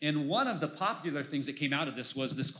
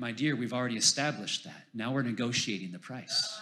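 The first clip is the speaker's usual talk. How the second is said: put-on whisper, lower pitch; 4 semitones lower than usual. Telling a joke about a man at a dinner party: imitating a whisper. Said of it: "And he whispered again".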